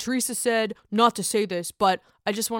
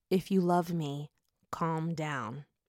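soft, hushed half-whisper; 4 semitones lower, 7 dB quieter than usual. Retelling what a man half-whispered in an upset woman's ear, retelling a half-whisper. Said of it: "whispers in her ear".

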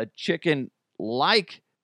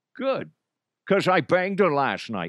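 put-on alien voice, Scottish accent, higher pitch; 4 semitones higher than usual. Imagining an alien who lands and speaks: Sean Connery voice. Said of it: "you sound just like Sean Connery".

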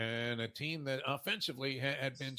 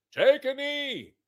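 put-on very loud, very high, shrill, drunk-sounding scream; 12 semitones higher, 13 dB louder than usual. Describing a fan in the stadium yelling at the team, imitating a fan screaming. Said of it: "and he's screaming".

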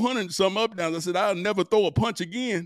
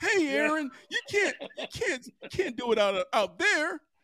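high, slow, unhurried voice with stammering; 6 semitones higher, 4 dB quieter than usual. Retelling what the coach said to aaron: imitating the coach. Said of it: "I used to do the doggone impersonation".

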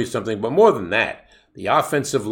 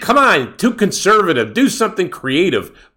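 loud, high screaming yell; 8 semitones higher, 6 dB louder than usual. Retelling how he yelled at the tv while watching the game, mock-screaming. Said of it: "I'm screaming at the TV like an idiot".

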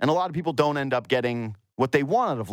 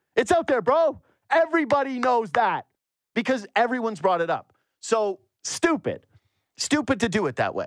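heated, fired-up rant with voice pitched high; 9 semitones higher than usual. Speaker criticizing how something was done, getting fired up. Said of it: "I'm getting fired up".

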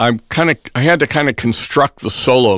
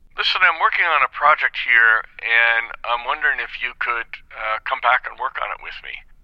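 plain, normal speaking voice; 2 semitones higher, 5 dB quieter than usual. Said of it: "And he said".

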